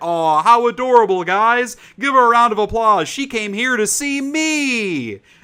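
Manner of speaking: shrill, loud, hyped-up delivery with long stretched me. Retelling what the host said to the audience: imitating The Rock. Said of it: "And he's like".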